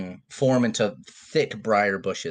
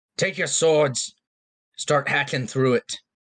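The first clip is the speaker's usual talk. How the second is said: authoritative, commanding voice, pitched up; 5 semitones higher than usual. Game master voices an unseen commander heard by the players: commanding voice. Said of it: "you hear a commanding voice say".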